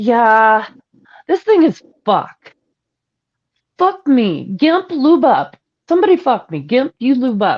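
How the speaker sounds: exasperated, tired, fed-up complaining woman's voice. Performing a requested line in the style of someone tired of it: fed-up woman, tired of it all. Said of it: "in the style of a woman who's tired of someone's shit".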